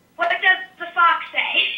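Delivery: plain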